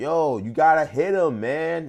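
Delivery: very loud, very slow, high yell. Retelling what the fighter's dad, his trainer, said in the corner: imitating a trainer yelling. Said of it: "he's just yelling at him".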